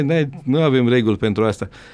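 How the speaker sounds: normal talking voice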